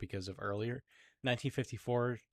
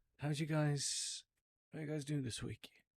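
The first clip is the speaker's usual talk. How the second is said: put-on proper British accent, pitched higher; 6 semitones higher than usual. Voicing Lucifer as a podcast guest having tea: British-accented Lucifer voice. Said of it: "he'd have a British accent".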